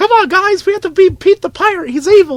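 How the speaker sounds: imitated cartoon duck voice. Joking about a pirate named Pete: Donald Duck voice. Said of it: "That was my attempt at Donald Duck".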